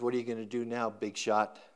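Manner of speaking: mock sneering thug voice. Describing an action-show scene, a bad guy speaks to the hero, mock sneer. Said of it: "the bad guys sneers".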